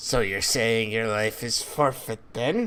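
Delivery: demon voice spoken through a grin. A narrator voicing a demon replying to another character: grinning demon. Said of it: "the demon just grins and says".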